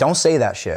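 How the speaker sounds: normal talking voice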